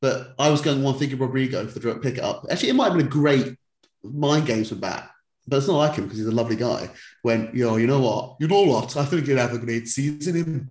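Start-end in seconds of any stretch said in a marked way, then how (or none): 9.0-10.7 put-on Welsh accent, starting suddenly mid-sentence. Talking about picking players for a team, the speaker slips into a Welsh accent. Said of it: "What the fuck was that accent?".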